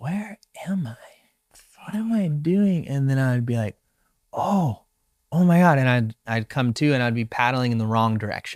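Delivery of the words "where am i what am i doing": soft, high, quiet whisper under the breath. A surfer retells their own words while paddling, whispering quietly. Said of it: "[Whispering quietly]".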